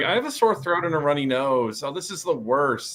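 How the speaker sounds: ordinary talk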